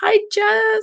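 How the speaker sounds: put-on forced, very high middle school girl voice. Host greets the producer at the start: middle school girl voice. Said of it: "I did that middle school girl voice".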